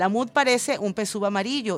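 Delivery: ordinary talk, nothing marked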